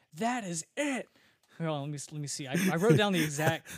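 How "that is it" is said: put-on, high, pissed-off screaming outburst. Retelling an actor's outburst on set: imitating Max Wright screaming. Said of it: "he screams".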